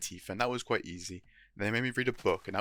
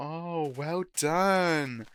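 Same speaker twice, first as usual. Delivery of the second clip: put-on patronizing praise voice, as if to a small child; 7 semitones higher than usual. Retelling how people praise an achievement: imitating talking to a five-year-old. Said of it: "put on a voice you would put on for a five-year-old".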